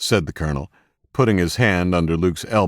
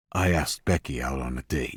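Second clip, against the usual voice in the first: quiet, soft-spoken words fading away; 4 semitones lower, 7 dB quieter than usual. Narrator reads the young man's answer to the colonel, in a quiet voice. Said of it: "he said in a quiet voice".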